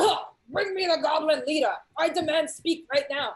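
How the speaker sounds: loud, high, barked delivery. Narrating the game, the speaker voices the leader barking out the line. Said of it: "And he barks out".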